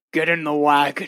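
low, rumbling, growling orc voice. Voicing an orc stepping out of a carriage to the players, growling. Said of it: "One of them growls at you".

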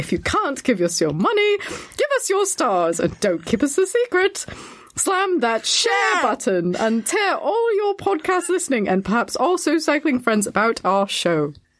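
put-on English accent. A podcast host reads the show's outro in an English accent. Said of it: "I'll say this in an English accent".

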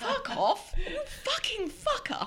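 really posh voice, very high-pitched. Retelling how they actually sound when swearing at someone, very posh voice. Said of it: "this really posh voice".

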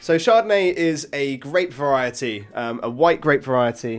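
loud, eager, excited, enthusiastic tone. Explaining to another speaker what a wine grape is: enthusiastic and loud. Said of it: "I'm getting quite, um, enthusiastic and loud".

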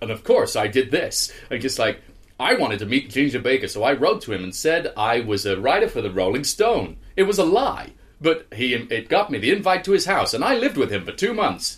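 put-on American accent brimming with self-assurance. Retelling how a man says he got to meet ginger baker, in a self-assured american accent. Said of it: "this sort of self-assured American accent".

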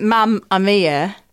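put-on Northern English accent. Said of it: "In her accent".

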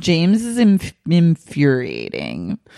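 acted drunk talk, words smeared together. Recapping a show, quoting a woman's talking head; imitating slurred drunk speech. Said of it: "she's like slurring".

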